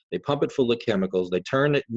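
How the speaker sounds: ordinary talk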